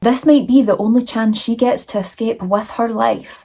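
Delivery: plain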